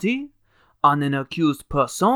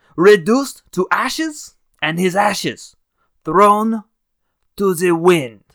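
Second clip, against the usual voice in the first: bad, terrible fake French accent; 3 semitones higher, 4 dB louder than usual. Quoting an author's opening passage aloud, in a terrible French accent. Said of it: "I do a really terrible French accent".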